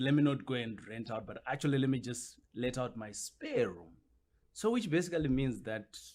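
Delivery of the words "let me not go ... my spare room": ordinary talk, nothing marked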